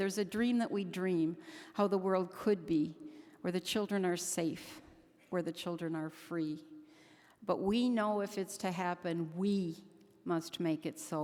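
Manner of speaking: ordinary talk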